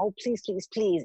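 mock earnest, repeated pleading, begging voice. Retelling how she asked journalist friends for support: imitating her own begging. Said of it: "It was literally begging".

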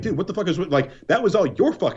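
mock fed-up, angry, exasperated outburst. Imagining a reply to someone blaming him: imagined angry reply. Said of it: "I'd be mad".

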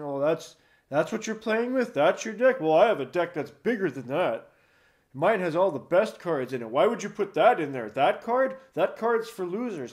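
smug, arrogant, condescending put-on know-it-all voice. Recounting a player in voice chat who belittled their decks, imitating an arrogant player. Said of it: "always had that arrogance in his voice".

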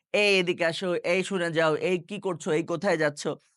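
plain

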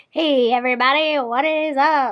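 1920s radio announcer voice. The speaker greets everybody, 1920s radio man voice. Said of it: "I just sounded like a 1920s radio man".

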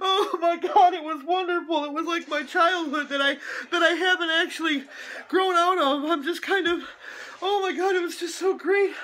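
tearful voice. Reacting to a movie trailer, crying. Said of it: "I'm crying over a trailer for a movie".

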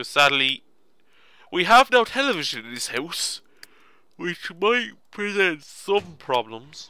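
loud speech mangled through a yawn. Narrating gameplay, speaking through a yawn. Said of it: "my voice got a bit messed up there. I just yawned".

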